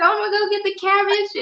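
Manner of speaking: play-acted, very high-pitched, excited child's voice. A parent retells her daughter's words in the grocery store, imitating excited daughter. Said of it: "And she gets so excited".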